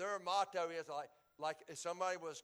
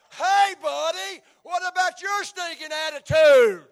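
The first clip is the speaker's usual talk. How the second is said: raised voice, much louder and higher; 11 semitones higher, 23 dB louder than usual. Showing how people answer someone who corrects them, in a louder counter-accusing voice. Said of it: "make counter accusations with a louder voice".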